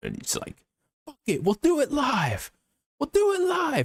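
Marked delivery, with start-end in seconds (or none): 1.0-3.9 frantic, very high, swooping freaking-out voice. Retelling an anchor's teleprompter failure on live news, imitating Bill O'Reilly freaking out. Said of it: "And he freaks out".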